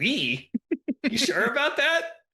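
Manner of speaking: high-pitched, swooping, skeptical and doubting tone. Retelling a TV scene, imitating Barney Fife sounding skeptical. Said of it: "he looks all skeptical".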